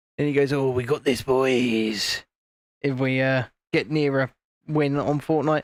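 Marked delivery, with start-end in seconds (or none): 0.5-2.2 put-on low, slow Cockney geezer drawl, boys stretched out. Imitating a friend near a Fortnite win: Vaughan impression, Cockney geezer voice. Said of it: "my Vaughan impression".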